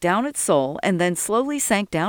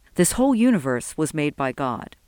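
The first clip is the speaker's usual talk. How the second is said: usual speaking voice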